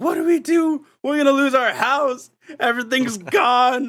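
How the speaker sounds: imitated scream of panic. Retelling a kitchen fire, quoting the sister: imitating someone screaming in panic. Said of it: "she's just screaming in my ear".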